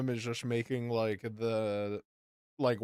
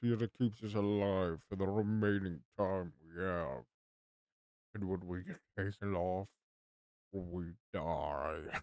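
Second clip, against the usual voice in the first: deep monster voice, much lower and quieter; 4 semitones lower, 6 dB quieter than usual. Narrating a story, the speaker voices the figure on the screen in a deep monster voice. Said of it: "I went from like the deep monster voice".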